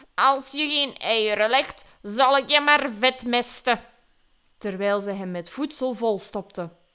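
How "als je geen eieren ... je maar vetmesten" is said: put-on grumbling, grousing old woman voice. Narrator reads an old woman's line to a caged duckling, grumbling. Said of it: "De oude vrouw bromde".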